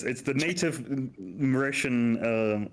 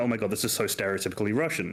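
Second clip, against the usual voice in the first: normal talking voice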